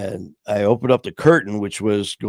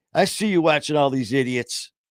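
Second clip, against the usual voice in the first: acted-out, high, loudmouth calling-out voice; 5 semitones higher than usual. Retelling what a loud guy said to him, imitating a loud man. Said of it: "he's saying it that loud".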